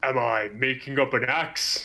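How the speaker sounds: big, hulking orc character voice. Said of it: "he looks down at you and he goes".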